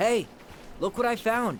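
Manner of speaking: yelling, sounding far away.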